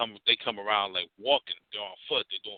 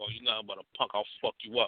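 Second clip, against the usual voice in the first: put-on taunting, insulting tone. Retelling an arrest, quoting the cop: imitating a cop's trash talk. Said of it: "he starts talking hella shit".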